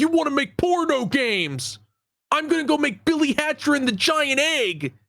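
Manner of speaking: put-on high, furious, ballistic screaming rant. Retell how Yuji Naka went ballistic around the time Yakuza entered development, imitating Yuji Naka screaming. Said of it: "went ballistic and screamed at him".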